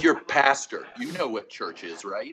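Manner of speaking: patronizing, condescending, talking-down tone. Retelling something they said earlier, mock-condescending retelling. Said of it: "like all condescending too".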